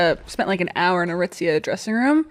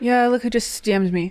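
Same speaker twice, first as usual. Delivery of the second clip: put-on breezy, nonchalant, offhand casual tone; 3 semitones higher than usual. Imitating another speaker announcing a famous dm: imitating a casual tone. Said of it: "she says it so casually".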